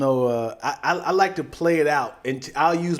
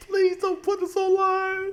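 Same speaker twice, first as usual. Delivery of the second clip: very high, whimpering, fake crying sobs. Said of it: "You start crying like".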